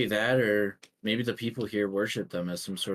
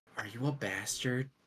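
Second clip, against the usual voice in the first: hush-hush, secretive, soft, leaning-in half-whisper; 7 dB quieter than usual. In a role-playing game, a player's character leans in to someone: half-whispering. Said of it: "they're just gonna like lean in and whisper".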